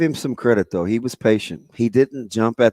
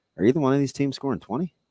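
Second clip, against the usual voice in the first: quieter, deadpan, matter-of-fact tone; 5 semitones higher, 5 dB quieter than usual. Retelling what the booth spotter asked about the predicted score, retelling a deadpan question. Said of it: "looked at me deadpan straight face".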